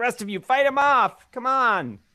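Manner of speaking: very high, shrill, loud kobold yell. Voicing a kobold scientist ordering the other kobolds to fight, yelling. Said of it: "The kobold scientist yells".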